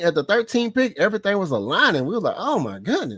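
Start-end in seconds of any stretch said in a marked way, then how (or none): none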